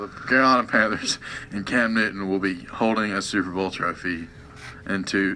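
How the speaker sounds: low, soft, glum and grudging tone.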